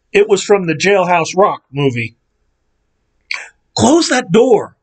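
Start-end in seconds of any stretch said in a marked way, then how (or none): 3.7-4.6 whispered, much higher pitch. Phyllis, in the dark, speaks to the narrator; whispered. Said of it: "Phyllis whispered at me".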